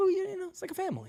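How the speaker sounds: relaxing, easy, calm tone, very high pitch. Retelling what Hirsch said at the first club event: imitating Hirsch's calm voice. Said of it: "very calm, relaxing voice".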